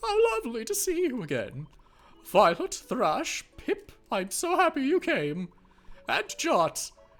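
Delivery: stately, regal queen character voice. Voicing the queen as she greets the returning heroes, in a put-on queen voice. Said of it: "the queen voice that I did".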